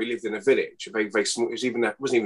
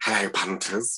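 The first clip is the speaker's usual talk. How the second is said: camp performer voice; 2 semitones lower, 3 dB quieter than usual. Showing what the impression sounded like: Julian Clary impression. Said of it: "doing an impression of Julian Clare".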